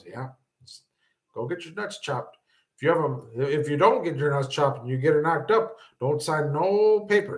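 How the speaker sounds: grave, dead-serious put-on delivery. Retelling what an uncle said: imitating a dead-serious tone. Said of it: "And he's real serious".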